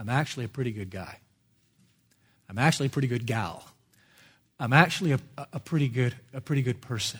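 soft, hushed half-whisper. Voicing an objector who softly claims to be good: imitating an objector half-whispering. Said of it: "I'll say it softly and I'll whisper it".

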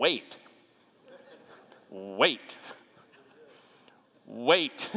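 soft, mechanical, automated robot announcer voice. Speaker mimicking the push-button's automated voice: automated robotic voice. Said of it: "hear the automated mechanical robotic voice say".

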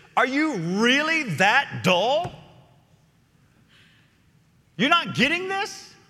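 acted fed-up frustration. Paraphrasing a verse literally from the Greek, acting out Jesus's exasperation. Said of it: "That's the tone".

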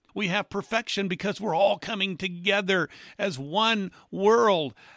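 heavy, dripping sarcastic tone. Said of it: "catch my sarcasm here".

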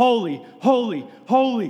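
calling out. Preaching, voice the angels overcome by god's majesty, endlessly crying out. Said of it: "they shout it almost like they're crying".

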